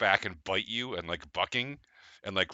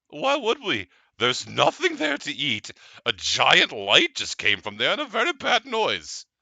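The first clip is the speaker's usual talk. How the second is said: put-on animal voice, like a cow; 7 semitones higher, 7 dB louder than usual. Voicing a cow asked to go back to Castle Magnus, cow voice. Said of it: "That's your cow voice".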